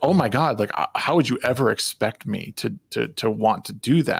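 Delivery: acted superior, belittling, condescending talking-down tone. Imitating how she answers her partner about their marriage: imitating a condescending tone. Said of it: "It's the condescending tone that's she's coming across with".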